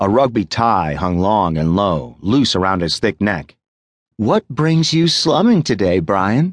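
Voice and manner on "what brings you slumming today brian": high, purring voice. Roxy greets Brian as he strides in, purring. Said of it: "she purred".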